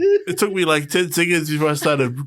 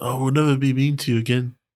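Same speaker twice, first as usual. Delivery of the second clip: ordinary delivery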